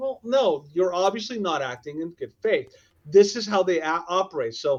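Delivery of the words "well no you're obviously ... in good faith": usual speaking voice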